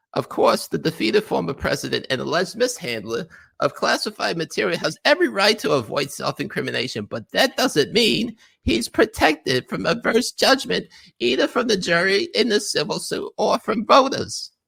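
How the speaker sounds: put-on nasally whiny voice. Reading a column aloud mockingly: nasally whiny Jen Rubin voice. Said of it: "I feel like I gotta do Jen Rubin voice".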